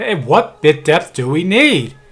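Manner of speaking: loud, projected calling out. Speaker testing a recording, switching from a regular voice to a loud voice. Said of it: "now I'm going to do a loud voice".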